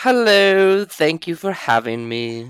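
sudden put-on British accent, pitched high. Filmmaker guest thanks the host for having him on: British accent. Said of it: "he's got a British accent now".

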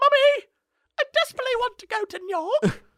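put-on very high, cute little child voice, English accent. Retelling a little kid on a train talking to his mom, cute little English kid accent. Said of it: "cute little English kid accents".

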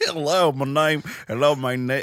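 put-on loud, stumbling Texas accent over an Indian accent. Retelling a scam caller's opening line: imitating a caller's Indian-accented Texas attempt. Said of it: "you should not be trying a Texas accent".

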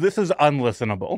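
ordinary delivery

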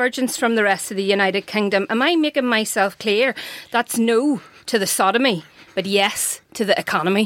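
put-on, proper Northern Irish accent. Performing a quoted speech for listeners, in a proper Northern Irish accent. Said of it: "who can do a proper accent".

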